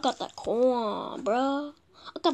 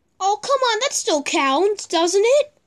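high, irritated, really annoyed, fed-up tone; 7 semitones higher than usual. A player streaming a game who keeps failing a landing, really annoyed. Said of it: "I'm really annoyed right now".

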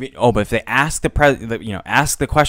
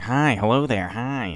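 slow, bland voice with zero personality; 5 dB quieter than usual. Describing a SpongeBob episode where he turns normal: imitating normal SpongeBob with no personality. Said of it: "like that one episode of SpongeBob where he, like, comes super normal".

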